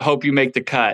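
ordinary delivery

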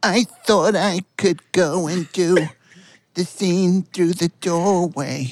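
unconvincing woman's voice, high and slow. Voicing a woman in a set story: bad woman's voice. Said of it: "Clay doing women is so funny".

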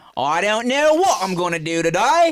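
put-on British accent. Recalling switching between British accents on an episode; British accent. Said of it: "four different types of British accents".

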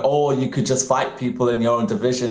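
ordinary delivery

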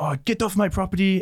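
mock, very high-pitched, flustered, frazzled outburst. Retelling what a woman at her door said when asked about an order, imitating an upset woman. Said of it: "She got really upset and was like".

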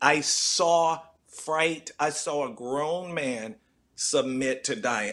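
very slow, hushed, solemn delivery.

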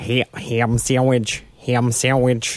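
put-on, badly done Western New York accent. Retelling what a talking bird said, in a Western New York accent. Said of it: "it spoke in his, absolute awful Western New York accent".

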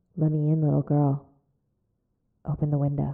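strained demonic rasp from the throat. Retelling Kaylee's story, the speaker voices the words she heard in a demon voice. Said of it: "trying to do that demon voice really hurt my throat".

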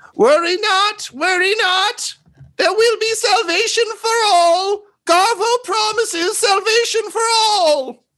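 tiny goblin voice, very high, yelling, stretched-out "all". The narrator voices a goblin that a player hears near the church: Garvo's little goblin voice yelling. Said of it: "you just hear a little goblin voice yelling".

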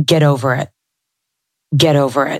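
mock-harsh, self-critical put-on voice. Describing the voice that comes up when things get challenging, imitating harsh inner voice. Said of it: "that part of me that's really hard on myself".

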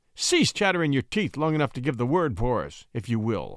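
ordinary delivery

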